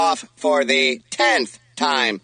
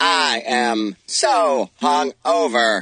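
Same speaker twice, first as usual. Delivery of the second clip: robotic synthesized computer voice. Hosts ask the Doctor about the birthday party; answering in a robotic computer voice. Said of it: "That computer voice seems to cover it right up".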